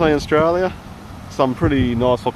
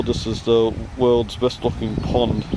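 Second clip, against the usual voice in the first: ordinary talk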